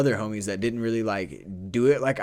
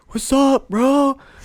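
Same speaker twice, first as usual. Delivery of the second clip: loud, very high, acted-out boozy drunk voice; 7 dB louder than usual. Retelling a drunk friend walking up at a bonfire: imitating a drunk friend. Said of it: "my homie walks up to me drunk as fuck".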